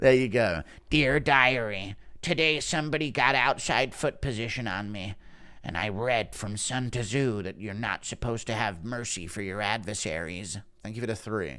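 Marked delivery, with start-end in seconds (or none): 0.9-10.6 quiet, soft, deliberate, drawn-out musing tone. Someone paid three Australian dollars for an impression about the outside foot battle; do a Sandhagen impression. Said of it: "Impression of Sandhagen".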